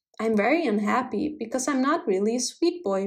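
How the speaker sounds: plain reading voice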